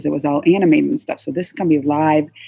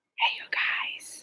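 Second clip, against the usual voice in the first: hushed whisper, much quieter. Having just snuck into a room to go live after a panel, greeting viewers, whispering. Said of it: "Why am I whispering?".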